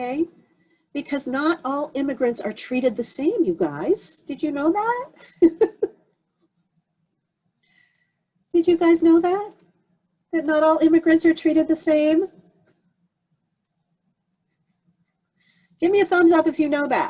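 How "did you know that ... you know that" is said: upset yelling, high-pitched and loud. Addressing the group about race and immigration, yelling and upset. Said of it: "Sorry, am I yelling?".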